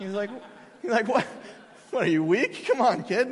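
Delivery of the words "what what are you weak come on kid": mocking, teasing, poking-fun delivery. Retelling a father teasing his young kid: imitating dad mocking. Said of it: "started making fun of me".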